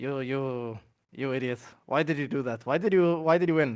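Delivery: put-on mocking, teasing tone. Retelling how they made fun of an opponent backstage: retelling own mocking taunt. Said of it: "making fun of, uh, Ramses backstage".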